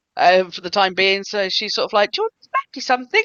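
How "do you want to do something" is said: very high, fast-rattled high-pitched voice. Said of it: "you went high pitched".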